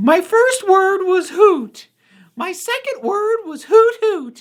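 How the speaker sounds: very high, loud cartoon voice, drawn out. Pulling a line from a character, Hootie voice. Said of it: "I can actually do a Hootie voice".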